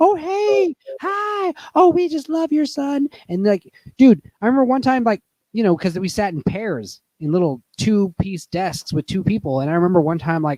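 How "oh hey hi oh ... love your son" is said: very high, drawn-out, overly nice teacher voice. Retelling how a harsh teacher acted sweet to parents: imitating a teacher being overly nice. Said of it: "she was so nice to them".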